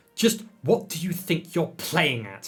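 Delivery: said in a hiss. Lily confronts another character, hissed. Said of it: "Lily hissed".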